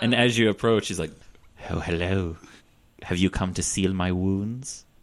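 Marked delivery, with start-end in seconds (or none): 1.7-4.8 creepy, sinister villain voice. Voicing a patient approached by a healer: Hannibal Lecter voice. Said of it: "All right, Hannibal Lecter".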